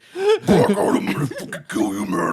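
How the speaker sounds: garbled, barely intelligible, unintelligible demon voice. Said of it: "that's what a demon would sound like".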